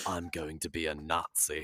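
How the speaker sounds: very quiet, slow, drawn-out, hushed half-whisper. Acting out a scene of Cedric sitting in his room stewing: imitating Cedric Diggory half-whispering. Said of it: "And he just whispers".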